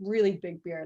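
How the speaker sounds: normal talking voice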